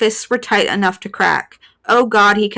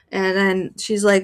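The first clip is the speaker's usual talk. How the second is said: plain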